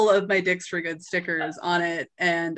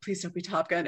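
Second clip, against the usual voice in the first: whispered really quietly; 6 dB quieter than usual. Retelling a remark whispered in a theater as the movie began, whispered really quietly. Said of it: "I just whispered like really quietly".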